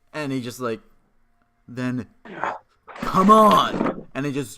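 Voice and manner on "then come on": through clenched teeth, impatient, louder. Voicing a guard woken at three am, gritting his teeth. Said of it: "he grits his teeth a little".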